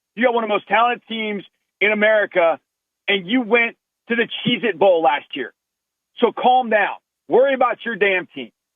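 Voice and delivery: heated, worked-up, hot under the collar rant. Tell a Longhorns follower to worry about their own team, getting hot about it. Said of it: "I get hot about this".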